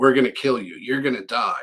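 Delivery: put-on horrible-sounding voice. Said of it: "And it's like this horrible voice".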